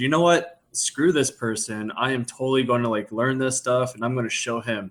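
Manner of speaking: ordinary talk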